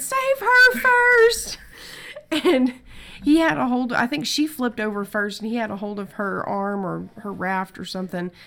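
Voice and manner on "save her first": very high, shrill, full-volume screaming. Retelling going under in the water while someone holds her, retelling a scream. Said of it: "So I'm screaming".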